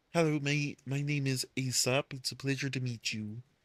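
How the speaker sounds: light, gentle hint of a cartoon frog voice. Showing the planned voice for a character named Aesop: slightly Kermit voice. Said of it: "slightly Kermit".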